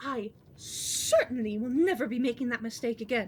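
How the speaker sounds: indignant, affronted complaining tone. Voicing a noblewoman complaining about being turned away: indignant "how dare they" tone. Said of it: "You hear the woman talking in a very, like, "Oh, how dare they" kind of tone".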